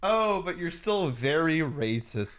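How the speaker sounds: high, slow, sarcastic voice with mock praise.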